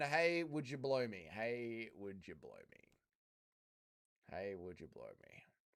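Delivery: very deep, low, lilting, swooping voice, repeated. Announcing it first, the speaker performs a Dougie DJ impression. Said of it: "Impression of Dougie D J".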